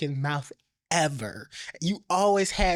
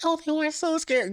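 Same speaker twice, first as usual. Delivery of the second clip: put-on weak, feeble voice, very high; 11 semitones higher than usual. Mocking a reality-show cast member at a reunion: imitating a fake weak voice. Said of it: "Wendy with that fake ass weak voice".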